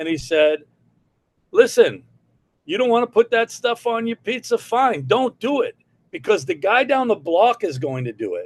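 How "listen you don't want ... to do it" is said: put-on New York accent and manner, very high. Retelling what a man told him, imitating a new york voice. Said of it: "in his New York mannerisms and voice".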